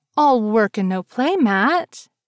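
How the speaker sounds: sulky, pouting, reproachful, slow and teasing. Narrator reads Patricia stepping up beside Matt, pouting. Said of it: "Patricia pouted".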